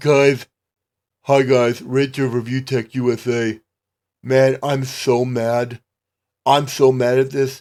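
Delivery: low, flat, lifeless, zombified monotone. Saying how angry you are about the news: flat, zombified stupor. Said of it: "You sound like you're in a zombified stupor".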